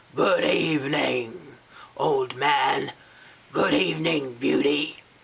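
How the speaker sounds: growling creature voice, every word growled out. Narrator reading the Beast greeting the old man and Beauty, growling Beast voice. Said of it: "said in a growling voice".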